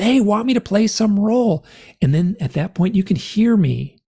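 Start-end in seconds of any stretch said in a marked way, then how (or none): 0.0-1.6 acted-out scream, slower. Speaker recalls performing a piece's last line, retelling own scream. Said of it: "And I scream".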